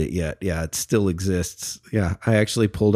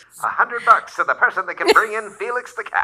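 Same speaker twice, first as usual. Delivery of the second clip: put-on 1920s announcer voice, much higher; 14 semitones higher than usual. Telling co-hosts about an old balloon reward, in a 1920s announcer voice. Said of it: "really good 1920s announcer voice".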